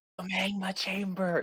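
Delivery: very soft stage whisper, a bit high. Showing how to say the show's name: pretend whisper said loud. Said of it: "Just pretend like you're whispering".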